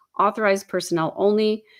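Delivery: ordinary talk, nothing marked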